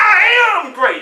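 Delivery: loud, high, wholehearted, emphatic conviction. Leading the audience in repeating a line: saying it like you mean it. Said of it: "Say it like you mean it".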